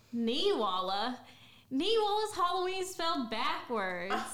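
put-on Southern American accent. An actor asked for a line from their play, in a southern accent. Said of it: "want to hear the Southern accents".

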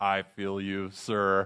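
small, low robotic voice. Retelling a scene where one of his robots pops its head out: little robot voice. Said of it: "and his little robot vo- voice".

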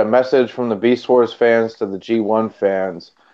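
plain

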